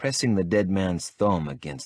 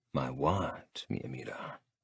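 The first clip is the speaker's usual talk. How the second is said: hushed, very quiet, dangerously low murmur; 6 semitones lower, 10 dB quieter than usual. Closing the distance to her, the narrator questions her in a dangerously low voice. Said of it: "my voice dangerously low".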